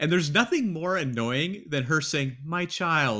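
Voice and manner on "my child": mock patronizing, condescending tone. Quoting a character who annoys them: imitating a patronizing tone. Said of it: "in this sort of patronizing tone".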